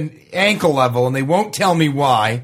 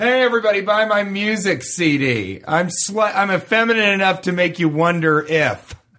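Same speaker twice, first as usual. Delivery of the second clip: put-on drawn-out, slightly tipsy-sounding drawl; 2 semitones higher than usual. Doing an impression of T J Miller after a few drinks. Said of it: "That's my T J after two or three drinks impression".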